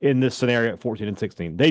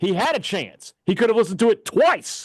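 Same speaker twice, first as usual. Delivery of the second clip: outright shouting, pitched-up yell; 9 semitones higher than usual. Arguing with another speaker about someone who did not listen, yelling. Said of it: "You don't have to yell at him".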